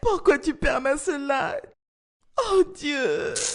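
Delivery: weeping, tearful voice. In an acted scene, a character cries out while another comforts them, crying. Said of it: "ne pleure plus".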